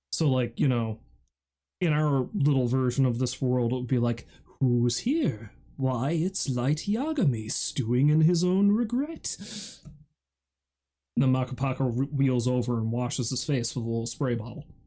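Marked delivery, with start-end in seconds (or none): 4.6-9.3 slow, swooping, creepily soothing British narrator voice. Do your own little version of this show's world, in a creepily soothing British voice. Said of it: "this creepily soothing British voice".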